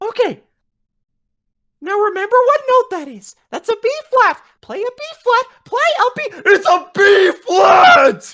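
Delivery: loud, very high, cracking voice. Retelling how he told the speaker which note to play: imitating a voice cracking. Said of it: "Like voice cracking and everything".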